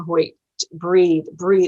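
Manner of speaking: ordinary delivery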